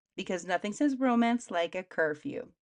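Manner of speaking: ordinary talk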